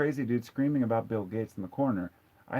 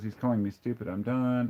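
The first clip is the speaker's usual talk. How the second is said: usual speaking voice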